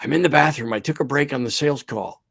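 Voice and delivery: put-on whispering voice. Retelling a client's answer on a phone call: imitating someone whispering. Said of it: "Why are you whispering?".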